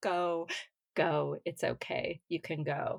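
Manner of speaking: mock crying, pleading tone, very slow and drawn out. Retelling own words to a dying grandma: retelling words said while crying. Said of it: "I was crying and saying".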